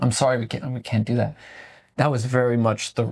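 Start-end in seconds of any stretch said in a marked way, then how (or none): 0.0-1.3 put-on sassy voice. Retelling a refusal to take back a chicken, retelling own sassy reply. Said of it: "I was extra spice mode".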